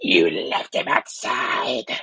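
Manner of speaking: deep, loud, booming demon voice. Retelling a movie scene where Ginger grabs her mom's hands: Ginger's demon voice. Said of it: "like full on like demon voice".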